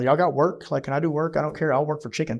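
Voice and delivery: ordinary talk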